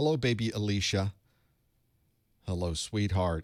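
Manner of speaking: soft, comforting, soothing voice. Speaker greets baby alicia and calls her sweetheart, in a soothing voice. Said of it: "She loves my soothing voice".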